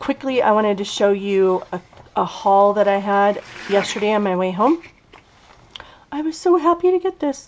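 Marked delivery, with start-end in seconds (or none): 6.1-7.5 very high, odd, squeaky put-on voice. Showing viewers a haul from yesterday, in a weird voice. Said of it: "Sorry, that was a weird voice".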